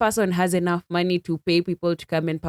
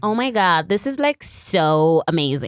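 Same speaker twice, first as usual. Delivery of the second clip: swooping American accent. Asked whether they can do an American accent, the speaker shows it: American accent. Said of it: "Can you do an American accent?".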